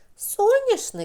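very high, astonished, amazed cry. The dragon mother reacts to the aunt praising the yard's flowers: amazed exclamation. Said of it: "вигукнула драко мама вражено".

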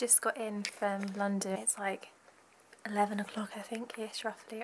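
speaking very quietly. Talking late at night while a nan sleeps: speaking really quietly. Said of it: "I'm having to speak really quietly".

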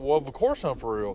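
ordinary delivery

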